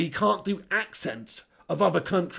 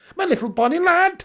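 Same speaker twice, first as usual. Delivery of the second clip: very high-pitched attempt at a Welsh accent; 12 semitones higher, 7 dB louder than usual. Asked to do a Brownie impression, trying a little Welsh accent. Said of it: "I'll try and do a little Welsh accent for you then".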